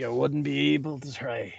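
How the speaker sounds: whispered under the breath. In a game scene, a character speaks aside, whispering under breath. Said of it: "I kind of whisper under my breath".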